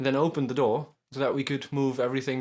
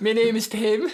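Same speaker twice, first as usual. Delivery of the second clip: high, loud, teasing put-on mocking voice; 8 semitones higher, 5 dB louder than usual. After a moving-house story, one speaker mimics another's introduction: mocking imitation voice. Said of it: "me doing the voice?".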